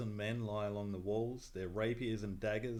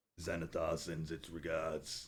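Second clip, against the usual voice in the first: deep, low-pitched voice; 5 semitones lower than usual. A game master voices someone hidden behind the boxes, in a deep voice. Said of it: "hear a deep voice uh, from behind one of the boxes say".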